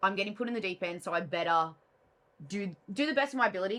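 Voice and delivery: ordinary talk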